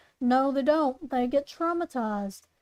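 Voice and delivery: ordinary talk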